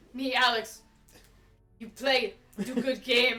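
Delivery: put-on inarticulate low voice. Acting out someone who can't say a whole sentence, do an impression of Alex. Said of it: "[name]'s impressions of me".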